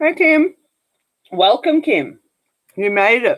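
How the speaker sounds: talking with mouth full. Greeting people as they arrive, talking with a mouthful of chocolate. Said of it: "talking with a mouthful of chocolate".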